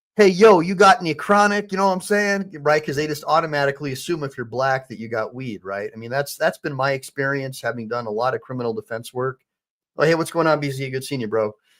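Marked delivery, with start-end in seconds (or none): 0.2-2.6 put-on loud, pitched-up street slang talk. Retelling a bag search, the speaker mimics the searchers in mock street-slang talk. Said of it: "they probably said it more like this".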